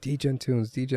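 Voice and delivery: put-on eager child voice, high, yelling. Describing his daughter walking into his room early and yelling, imitating daughter yelling. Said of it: "She's literally just yelling like".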